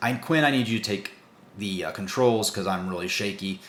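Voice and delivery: ordinary talk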